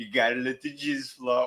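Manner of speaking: imitated male voice.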